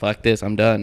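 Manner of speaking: usual speaking voice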